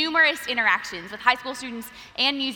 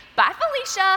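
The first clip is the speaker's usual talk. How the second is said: put-on sweet, cute little child's voice, southern accent, pitched up; 7 semitones higher, 4 dB louder than usual. A speaker retells what a four-year-old girl says to her show hog each night; imitating Landry's cute southern accent. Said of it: "in her cute southern accent".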